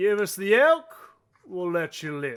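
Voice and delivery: very loud, swooping, threatening voice. Voicing a man with a heavy crossbow demanding the elk: crossbow man making a threat. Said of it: "a man with a very heavy crossbow".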